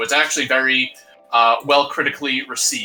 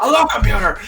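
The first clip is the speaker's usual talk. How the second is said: play-acted anger getting madder, louder and higher; 9 semitones higher, 5 dB louder than usual. Repeating a greeting to a computer as a joke: pretend getting more and more mad. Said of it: "Just continuously get more and more mad".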